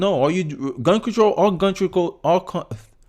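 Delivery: stuttering with halting restarts and repeated words. Arguing a point with another speaker: stuttering. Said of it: "Sorry, I'm stuttering now".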